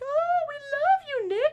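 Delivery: high, loud, gushing fangirl voice.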